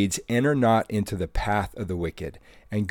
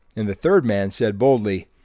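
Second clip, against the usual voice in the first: ordinary delivery, nothing marked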